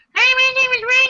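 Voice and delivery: very high, squeaky voice. Show Brian what he sounds like as he introduces himself, imitating how Brian sounds. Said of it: "This is what you sound like".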